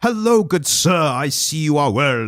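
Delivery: put-on old-fashioned, over-the-top, high-pitched theatrical delivery. Showing how pre-Streetcar Named Desire acting sounded: over-the-top old style acting. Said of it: "that kind of over the top".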